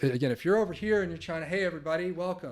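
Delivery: very quiet, faint, far-off, off-mic voice. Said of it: "turning my head".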